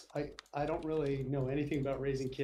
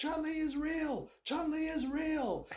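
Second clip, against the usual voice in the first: put-on shrill, very high, drawn-out teenage boy scream; 13 semitones higher than usual. Retelling a teenage boy in the background: imitating a teenage boy screaming. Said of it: "a teenage boy screaming in the background".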